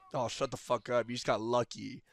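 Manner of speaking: mock, put-on snarky talking-back tone. Describing an annoying character in a game, imitating his snarky comeback. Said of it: "annoying and like talking back all the time".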